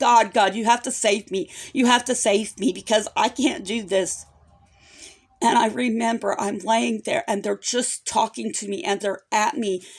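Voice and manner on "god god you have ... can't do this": put-on desperate, crying-out tone. Retelling lying in bed at night: imitating crying out to God. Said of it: "I'm crying out to God".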